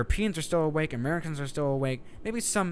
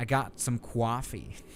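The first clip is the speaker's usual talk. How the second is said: New York accent, spoken slowly; 4 semitones lower than usual. Showing off the accent the speaker loves most, in a New York accent. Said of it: "it's always the New York accent that does it for me. Like the".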